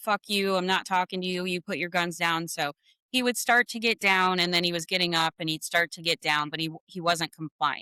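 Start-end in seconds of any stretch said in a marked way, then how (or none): 0.0-2.5 put-on taunting tone. Retelling what a suspect said to police, imitating someone taunting. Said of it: "taunting them like".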